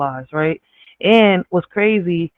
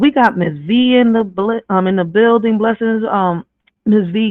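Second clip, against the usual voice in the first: stammering with um fillers, breaking off mid-word; 4 semitones higher than usual. Welcoming a viewer to the live stream, stuttering. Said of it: "Damn, I'm stuttering again".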